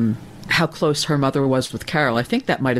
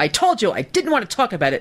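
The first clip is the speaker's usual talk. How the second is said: mock shrill, fed-up yell with swooping pitch; 8 semitones higher than usual. Imitating how she yelled at Ganji: imitating Robin's shrill angry yell. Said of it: "that shrill tone of voice".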